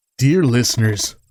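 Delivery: put-on broadcaster voice, like radio announcer. After clearing their throat, a character addresses the audience in a radio host voice. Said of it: "when you do a radio host voice".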